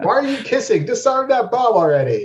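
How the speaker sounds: very high-pitched shouting. A self-described movie nerd telling how he reacts to action films, retelling yelling at the screen. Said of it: "I'm the guy who yells at the screen".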